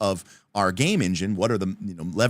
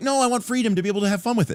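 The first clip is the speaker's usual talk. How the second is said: acted, frustrated, exasperated, very high-pitched; 11 semitones higher than usual. Imitating a player told what the spell does: imitating a frustrated player. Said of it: "you get frustrated because you're like".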